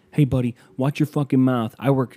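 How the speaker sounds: mock yelling, imitated man yelling. Retelling a run-in with a pizza delivery man, imitating him yelling. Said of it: "And he's yelling at me now".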